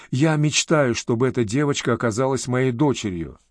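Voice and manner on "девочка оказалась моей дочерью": ordinary delivery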